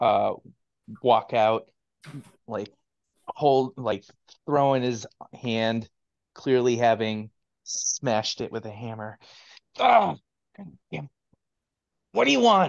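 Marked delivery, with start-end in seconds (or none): 9.8-12.7 very high, rough, irritable, disgruntled snarling grumble. Voicing a shopkeeper who just smashed his hand with a hammer: disgruntled voice. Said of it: "a disgruntled voice go".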